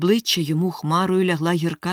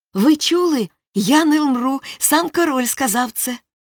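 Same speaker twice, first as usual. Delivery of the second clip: high, rapturous, delighted cry of joy; 8 semitones higher, 4 dB louder than usual. Told he will not die, he turns to the lords, exclaiming with delight. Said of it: "захоплено вигукнув".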